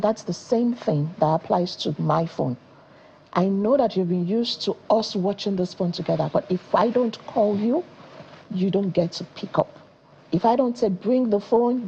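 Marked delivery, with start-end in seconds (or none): none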